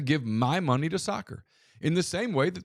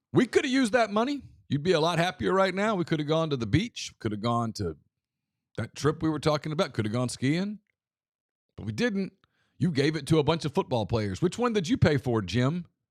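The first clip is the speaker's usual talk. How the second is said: needling, nagging sarcasm. Picturing a wife after her husband got angry on Saturday night, imitating a wife's sarcasm. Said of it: "somebody's wife said sarcastically".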